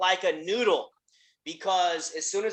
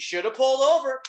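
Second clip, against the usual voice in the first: nonchalant, indifferent brush-off tone, pitched up; 5 semitones higher than usual. Retelling what the man who broke the speaker's window said, imitating nonchalance. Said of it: "nonchalant, couldn't even care less".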